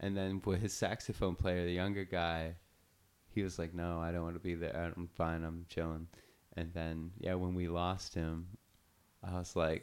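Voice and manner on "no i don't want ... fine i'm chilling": ordinary talk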